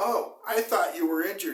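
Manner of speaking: facetious, talking-down sarcasm. Retelling what a man at the gym said about the screaming: imitating a sarcastic, patronizing tone. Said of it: "facetious and sarcastic and patronizing".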